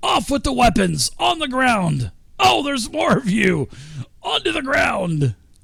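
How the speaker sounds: goblin voice, pitched way up. Voicing a goblin who orders intruders to drop weapons: goblin voice. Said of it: "poking his spear out towards you guys, and he's saying".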